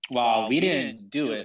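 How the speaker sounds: openly sarcastic retort. Replying in character to news of what the group just did: sarcastic. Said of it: "I tell him sarcastically".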